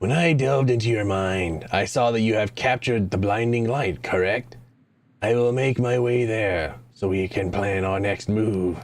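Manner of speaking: put-on, throat-straining ghoul creature voice. Reading a game character's lines aloud, making a bargain: ghoul voice. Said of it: "doing the ghoul voice hurts".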